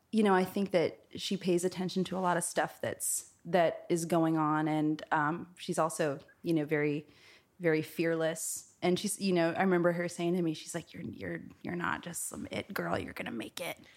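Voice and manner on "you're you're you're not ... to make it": put-on elderly old woman's voice. Retelling what a mentor told her, imitating her voice, an old voice. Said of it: "I don't know why I'm doing her voice, like, an old".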